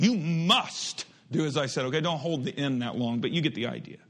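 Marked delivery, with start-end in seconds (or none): 0.0-1.9 stern parental scolding tone with heavy stress on "must". Leading listeners through a verse, show the emphasis by scolding a child, stressing 'must'. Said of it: "just like you would if you were scolding your child".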